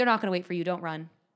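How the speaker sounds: acted, very cold, icy delivery. Retelling a gate agent's reply to a running family, imitating a super cold agent. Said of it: "Just like super cold".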